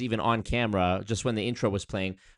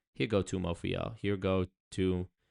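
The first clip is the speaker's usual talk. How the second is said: ordinary talk, nothing marked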